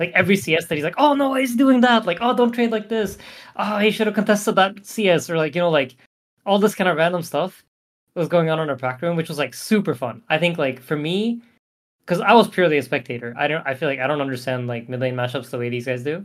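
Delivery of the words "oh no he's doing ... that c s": put-on nervous voice, higher pitch. Retelling Nish watching Boxy play: imitating nervous Nish. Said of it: "he's more nervous than when we play".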